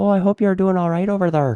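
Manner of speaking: vague, loose Irish lilt at very high pitch. Podcast co-hosts trying out accents, one repeats a greeting in a kind of Irish accent. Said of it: "Kind of".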